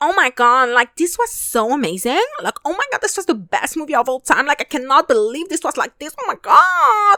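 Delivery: exaggerated American accent. Describing how moviegoers talk leaving the theater, stereotypical American impression. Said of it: "the cliche and stereotypical impression".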